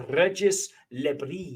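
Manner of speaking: name said in a fine French accent. Pronouncing someone's Belgian name aloud: French accent. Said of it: "I'm going to do it in my finest French accent".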